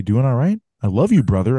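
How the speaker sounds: put-on friendly voice. Retelling how the brother character greets his sibling: imitating the friendly older brother. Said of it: "but instead he's like".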